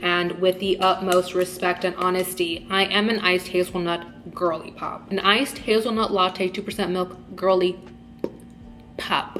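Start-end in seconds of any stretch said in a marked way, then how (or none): none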